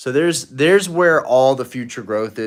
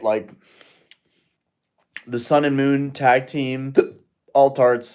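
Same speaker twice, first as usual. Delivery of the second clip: speaking while hiccuping. Speaker talking about collecting cards, hiccuping. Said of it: "I don't know why I'm hiccuping so much".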